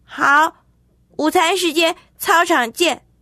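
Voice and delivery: high, shouted, yelling. Narrator reads a character answering a challenge, shouted back. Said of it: "立刻胡哲吼回去".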